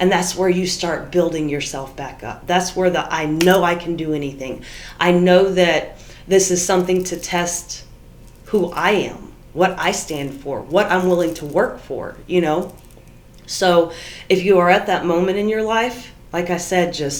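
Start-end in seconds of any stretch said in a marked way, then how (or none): none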